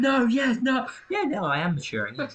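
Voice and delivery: very high-pitched, shrill, swooping, drawn-out shriek. Retelling a film scene where a character screams at a child: imitating someone screaming. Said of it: "Starts screaming at this child".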